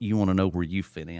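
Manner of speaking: ordinary talk, nothing marked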